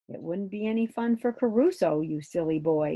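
ordinary delivery

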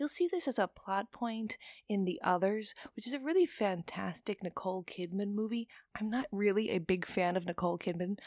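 soft, hushed confiding whisper. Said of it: "I don't know why I'm whispering this".

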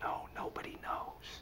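hushed whisper. Retelling how a hesitant man whispered so nobody could hear: whispered. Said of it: "whispering like this".

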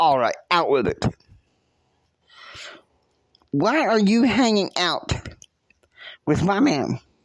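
bright, peppy anger. Speaker retells Jesse confronting the woman who answered about her man: imitating Jesse, perky angry. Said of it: "Jesse is like perky angry".

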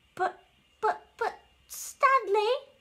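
timidly spoken. Turtle speaks to Stanley, who says they're only shadows; timid. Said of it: "Turtle said timidly".

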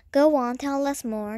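ordinary delivery

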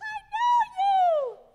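shrill, high, loud belted shout. Joking with an audience, the speaker quotes a movie line in an Elf impression. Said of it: "That was the best impression I've got".

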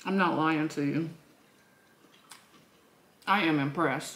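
speaking while chewing a mouthful of food. Tasting a dish they just made, talking with mouth full. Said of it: "Let me not talk with my mouth full".

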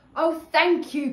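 very loud, high, delighted outcry. James thanks Father Christmas for his gift, cried out. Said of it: "cried James".

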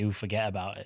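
put-on wiseguy mobster character voice. Joking about an accountant for the mob: put-on mob accountant voice. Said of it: "bad for an accountant to say".

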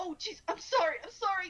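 sudden, scared, very loud, high, panicked tone. Retelling the stranger's reaction to a death glare: imitating a panicked apology. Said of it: "immediately went from that kind of tone to like".

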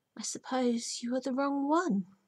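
under her breath. Reading a character speaking to a motionless bird; said under her breath. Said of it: "she said under her breath".

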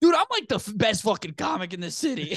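very high-pitched, mock, sloppy, hammered drunken bragging. Retelling what a drunk Joey said waiting for his Uber: imitating drunk Joey. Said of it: "He's just hammered, going like".

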